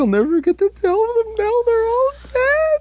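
woeful, mopey sad voice, very high pitch. Retelling a story scene, voicing a character, mock-sad character voice. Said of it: "and he was all sad".

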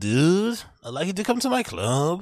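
put-on American accent. Imitating a comedian phoning to book a friend: Joe Rogan accent. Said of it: "whatever that fucking accent is".

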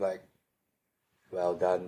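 low, flat, stoic, emotionless deadpan monotone. Acting out her own reply when asked how someone did: acting out a flat, stoic monotone. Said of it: "like a stoic monotone".

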